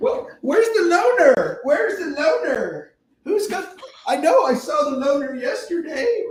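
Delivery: high-pitched, loud put-on frog puppet voice. Acting out the teacher for listeners, Kermit the Frog impersonation. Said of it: "this is my Kermit the Frog impersonation".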